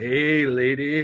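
put-on creepy voice. Retelling how Kirk immediately reacts: imitating Kirk's creepy come-on. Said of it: "the reason I'm being as creepy as I'm being".

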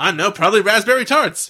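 loud, high, aggressive delivery. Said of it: "he's really aggressive about it".

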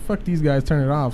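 ordinary talk, nothing marked

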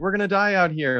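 acted, high-pitched, hollering yell.

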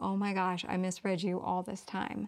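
ordinary talk

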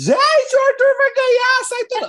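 pretend screaming outburst.

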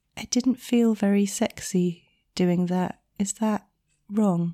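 very quiet, slow, hesitant, timid voice. Retelling a student's hesitant question to the instructor, imitating a really quiet voice. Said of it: "in a really quiet voice".

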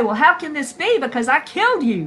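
mock bewildered, perplexed, puzzled disbelief. Narrating a Bible scene, the devil answers Jesus after being summoned; perplexed. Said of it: "the devil might be perplexed".

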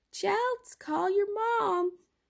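put-on very high-pitched old-lady voice.

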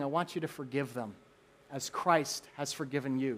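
soft, very quiet, hushed half-whisper. Retelling words half-whispered to someone's heart: imitating a half-whisper. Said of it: "he's whispering".

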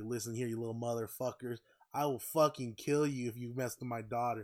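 mock menacing, threatening tone. Retelling how the manager's dad pulls up with a Glock: imitating a threat. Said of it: "and he threatens, he's like".

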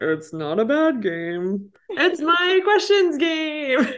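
pitch swinging up and around. Speaker playing Santa for a little girl, Santa Claus voice. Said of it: "I'm gonna try to do like a Santa Claus voice".

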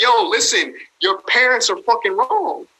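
emotive, charged, emphatic delivery, every word pushed. Imitating Gary Vee speaking with emotion: Gary Vee impression. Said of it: "He's using emotion. He's like".

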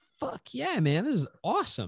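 high, loud, thrilled whooping yell. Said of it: "And I was like".

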